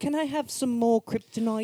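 put-on very high-pitched little orphan-boy voice. During a comic skit full of voices, doing an Oliver Twist voice. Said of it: "That went from like Oliver Twist to".

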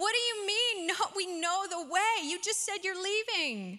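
acted, heated anger building as it goes. Retelling Thomas questioning Jesus about the way, Thomas voice, mock anger rising. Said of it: "Thomas's voice getting louder and maybe some anger rising".

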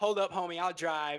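ordinary talk

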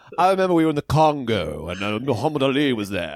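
put-on almost-English accent. While discussing how George Plimpton talks, speaker does an almost-English George Plimpton voice. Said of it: "like it was so like almost English".

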